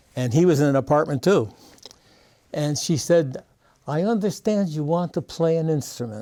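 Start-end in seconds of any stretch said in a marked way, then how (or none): 3.9-6.3 put-on accent with Yiddish inflection.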